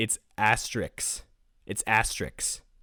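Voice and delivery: put-on confident, sure-of-himself, assured tone. Recounting how he corrected her in a funny way: imitating a confident correction. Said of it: "he corrected her in such like a confident way. He was like, ... Like that".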